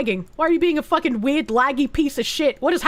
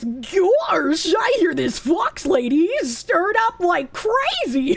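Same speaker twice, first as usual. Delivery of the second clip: silly, goofy put-on voice; 4 semitones higher than usual. Speaker announces a goofy voice and speaks the next line in it. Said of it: "Goofy voice".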